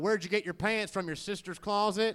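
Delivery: sneering, mocking, poorly done put-on Southern accent. Recalling a redneck kid from high school, mocking imitation of Moody. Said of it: "the redneck kid in my high school who would go".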